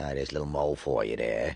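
rough, gravelly bartender voice.

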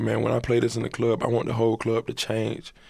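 plain

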